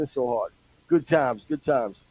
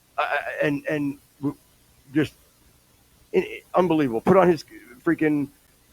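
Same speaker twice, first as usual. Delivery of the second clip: normal talking voice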